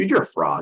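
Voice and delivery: put-on mocking tone. Retelling a mocking inner voice heard while tucking in the kids: imitating a mocking inner voice. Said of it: "this mocking voice inside me".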